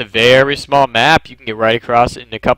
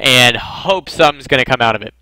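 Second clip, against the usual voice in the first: plain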